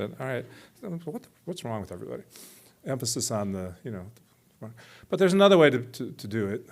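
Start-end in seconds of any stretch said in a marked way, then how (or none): 0.8-2.2 irritated, fed-up, annoyed voice, pitched up. Showing how a line can be read aloud: annoyance. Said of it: "So that's annoyance".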